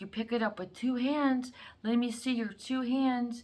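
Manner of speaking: put-on old woman whisper. Retelling a grandma teaching her grandchild to make pie: imitating a grandma whispering. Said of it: "whispering to the child".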